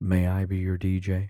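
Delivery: quiet, hushed voice. Showing how clients are asked to book the dj: soft, lowered voice. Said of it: "I get real soft, bring it down".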